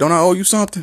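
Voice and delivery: mock aggressive, threatening, menacing tone. Retelling what a guy said to him at thirteen, imitating a threatening tone. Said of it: "these are threatening tones".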